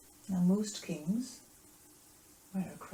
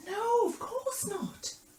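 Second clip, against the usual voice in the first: high, slow put-on innocent tone. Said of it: "And Peter went".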